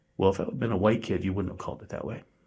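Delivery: muttered under the breath. Recounting a remark made after a foul call, retelling an under-breath mutter. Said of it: "I said under my breath".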